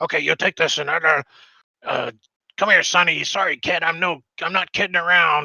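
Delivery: raspy, scratchy devil voice. Voicing a devil shopkeeper checking off a list: scratchy devil voice. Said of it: "scratchy kinda voice".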